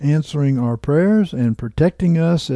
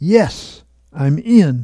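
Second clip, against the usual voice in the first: mock proud, victorious, triumphant tone; 2 semitones higher, 4 dB louder than usual. Reading a man's words as he adjusts knobs on his computer: victorious voice. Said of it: "he said in a victorious voice".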